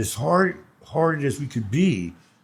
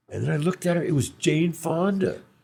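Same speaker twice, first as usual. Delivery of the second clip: ordinary delivery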